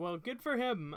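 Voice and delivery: sarcastic. Reacting to news of an actor's later career: sarcastic. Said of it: "it sounded just so sarcastic".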